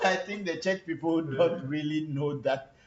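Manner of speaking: talking through loud laughter. Speaker talking with Papa, laughing while speaking. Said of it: "sorry, I'm laughing".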